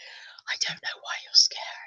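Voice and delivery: whispering. Answering a viewer who says it is creepy: whispering. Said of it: "It's only me whispering".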